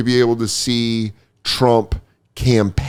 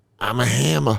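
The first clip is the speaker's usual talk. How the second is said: put-on Boston accent with Boston vowels; 5 dB quieter than usual. Retelling what a comedian said after a show: imitating Bobby's Boston accent. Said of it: "That's all in his Boston accent".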